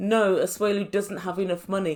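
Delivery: ordinary talk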